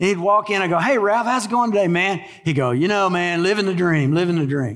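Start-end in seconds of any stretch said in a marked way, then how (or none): 2.7-4.8 mock-sarcastic, put-on sarcastic tone. Retelling what Ralph would say when greeted each day, imitating Ralph's sarcasm. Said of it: "he was being sarcastic".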